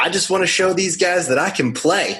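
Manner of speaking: put-on heavy, thick Southern accent, very high and loud. Retelling what a stranger on the phone said: imitating a thick Southern accent. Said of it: "the thick Southern accent".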